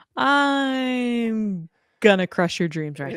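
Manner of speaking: mock dream-crushing bad-news tone with "I'm" drawn out. Teasing a co-host about their usual tone, the speaker is imitating a dream-crushing tone. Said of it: "There's always a tone in your voice that goes".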